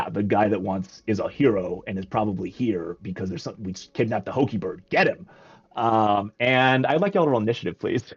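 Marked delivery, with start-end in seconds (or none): 0.0-5.3 low, growling character voice. A game master voicing a second character reacting to the players: low voice. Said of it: "the low voice was it".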